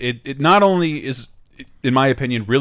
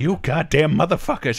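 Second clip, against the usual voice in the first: put-on angry ranting voice, higher; 3 semitones higher than usual. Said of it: "terrible Giamatti impression ... him getting mad".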